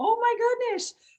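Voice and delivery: amazed coach voice, very high-pitched.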